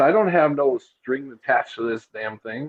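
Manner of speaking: usual speaking voice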